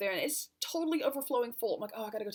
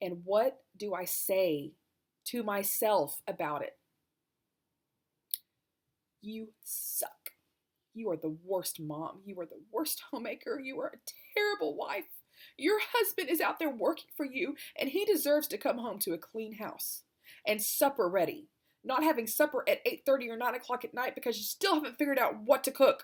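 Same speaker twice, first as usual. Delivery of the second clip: on the edge of crying, holding back tears. A mother describing the harsh things she tells herself: holding back tears. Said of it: "I'm sorry, I'm trying not to cry".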